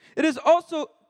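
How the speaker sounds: high-pitched, attempted put-on Italian accent. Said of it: "should I try reading, reading this in a Italian accent? I can't do it, but I can try".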